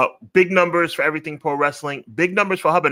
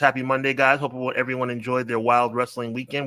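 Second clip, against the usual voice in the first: usual speaking voice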